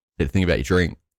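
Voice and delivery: ordinary talk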